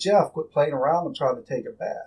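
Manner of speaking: ordinary talk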